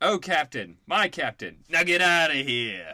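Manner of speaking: put-on Brooklyn accent. Reading a listener's caption aloud, the speaker does a Brooklyn accent. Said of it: "insert Brooklyn accent, so that's what I did".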